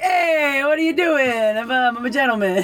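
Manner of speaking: bad put-on Italian accent. Recalling a show with italian characters, a performer reenacts a line, bad italian accent. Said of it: "the director wanted the characters to be Italian with an Italian accent".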